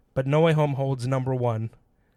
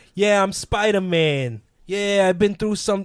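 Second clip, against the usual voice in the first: put-on overdone New York accent, pitched up high; 7 semitones higher, 4 dB louder than usual. Showing what you disliked about the accent in part two, as Spider-Man with too full New York accent. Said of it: "he goes too full New York".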